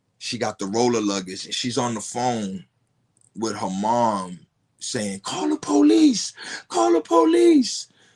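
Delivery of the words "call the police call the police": high, loud scream in hysterics. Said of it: "it's just hysterical".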